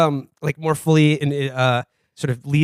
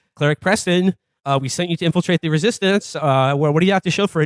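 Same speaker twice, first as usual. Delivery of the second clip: plain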